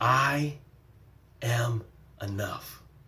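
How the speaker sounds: hushed, very quiet, heartfelt, dramatized delivery. Asking listeners to repeat an affirmation after her, dramatizing. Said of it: "And I say it with dramat, dramatizing".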